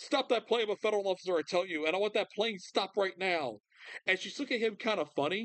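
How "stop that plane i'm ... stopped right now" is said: mock, restrained, demanding cry in a man's voice. Speaker retells an incident on a plane, imitating a man yelling. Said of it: "And he's yelling".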